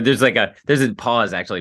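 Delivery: ordinary talk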